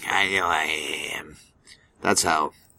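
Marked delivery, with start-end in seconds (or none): 0.1-1.4 very low, slow, drawn-out creepy voice. Showing how the character Mister Sweaty Britches sounds: Mister Sweaty Britches voice. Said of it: "that's how Mister Sweaty Britches sounds".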